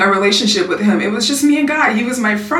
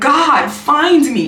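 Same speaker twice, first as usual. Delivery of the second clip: tearful, pleading, spoken through crying; 4 semitones higher than usual. Retelling a prayer said while crying on the floor: retelling a tearful prayer. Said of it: "And I'm crying, I'm in tears".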